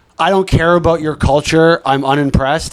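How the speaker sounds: plain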